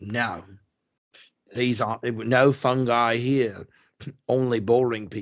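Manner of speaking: put-on terrible, unconvincing Australian accent. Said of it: "my terrible Australian accent".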